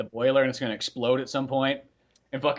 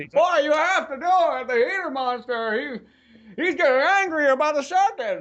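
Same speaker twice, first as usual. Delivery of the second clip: put-on very high, classic old-movie old-man voice; 13 semitones higher, 4 dB louder than usual. Acting out the man behind the door giving orders: Jimmy Stewart voice. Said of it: "he's played by Jimmy Stewart".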